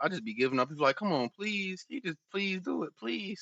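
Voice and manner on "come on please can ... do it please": high, gentle, nice pleading tone. Retelling how they ask their kids to behave: imitating own pleading with kids. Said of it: "I be like".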